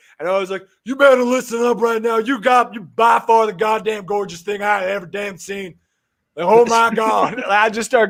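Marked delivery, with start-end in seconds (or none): 0.8-7.4 taunting wrestling-promo delivery. Retelling how you slammed and chugged a beer, then spoke to her, going full Stone Cold Steve Austin. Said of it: "going full Stone Cold on her ass".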